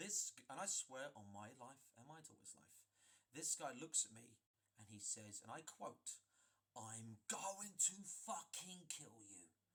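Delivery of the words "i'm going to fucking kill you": explosive, enraged, furious outburst. Retelling a man's threat before he attacks: imitating an explosive angry threat. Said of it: "And he is angry, and he is explosive".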